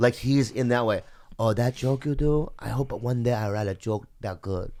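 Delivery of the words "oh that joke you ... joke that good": put-on Korean accent. Imitating a guy who comes up to praise his joke, with a put-on Korean accent. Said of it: "Without the Korean accent".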